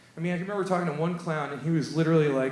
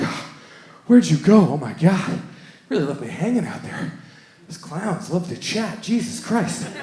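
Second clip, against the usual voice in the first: acted-out panting, mock out of breath, much louder; 6 dB louder than usual. Retelling a woman reaching the bar after losing track of the speaker, imitating someone panting. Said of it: "like panting".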